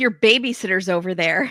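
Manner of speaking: usual speaking voice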